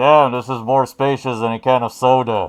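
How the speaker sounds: echoing voice. Voicing a character speaking from inside a mushroom: echoey voice. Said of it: "an echoey voice from inside".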